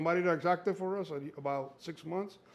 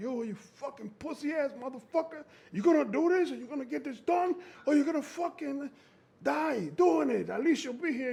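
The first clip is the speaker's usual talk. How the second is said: pitched-up, self-berating yelling; 10 semitones higher, 3 dB louder than usual. Retelling training alone in the truck: imitating himself yelling. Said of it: "I'm in there yelling at myself".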